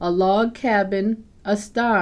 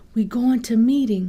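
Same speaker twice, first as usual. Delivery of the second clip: hushed, soft whisper; 3 semitones higher than usual. Reading a story, voicing the mother waking her child at night, whispering. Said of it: "she whispers".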